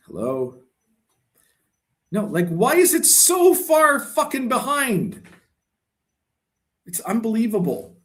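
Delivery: fed-up, disbelieving outburst, swooping and drawn out. Reloading a chat that lags far behind: frustrated outburst. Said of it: "a fucking breakdown here".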